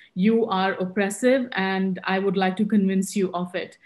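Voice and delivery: ordinary talk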